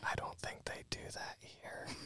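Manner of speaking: soft, hushed, barely voiced whisper. Leaning over to her to say something in her ear, whispering. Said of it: "I'm going to whisper in her ear".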